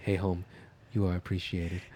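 put-on whisper. Acting out a man at his front door speaking to his home, imitating someone whispering. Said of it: "He's whispering".

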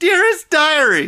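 piercing, very loud yell. Asked to do diary entries as a Charlie Day impression. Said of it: "If you just want to do a Charlie Day impression".

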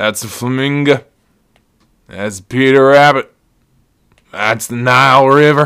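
loud, sloppy, hammered put-on drunk rambling. Retelling a video of his hammered brother, imitating drunk speech. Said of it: "He's so hammered".

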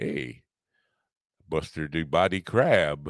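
slow, comic Canadian accent eased out. Trying out different Canadian accents, Tommy Chong Canadian accent. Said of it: "Tommy Chung's version of a Canadian accent".

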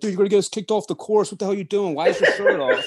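play-acted, high, shrill, scolding scream. Retelling how a brother drove up on the golf course: imitating someone screaming. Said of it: "driving up, screaming".

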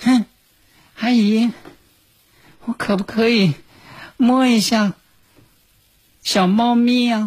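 put-on timid, high, slow little-girl voice. Retelling a little girl's shy request in an elevator: imitating a girl speaking softly. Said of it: "就小声儿呢".

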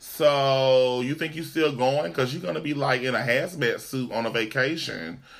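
normal talking voice

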